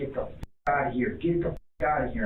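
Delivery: plain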